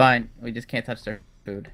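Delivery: ordinary talk, nothing marked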